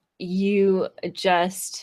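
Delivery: ordinary delivery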